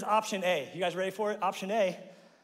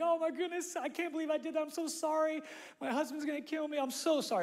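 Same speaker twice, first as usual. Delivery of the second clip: high, tearful, apologetic put-on crying; 9 semitones higher, 3 dB quieter than usual. Retelling a car accident, playing the lady who backed into him; imitating a woman crying. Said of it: "She's crying".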